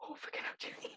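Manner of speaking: hushed whisper. Role-playing player speaking in character to Julie, whispering. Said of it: "I'm whispering".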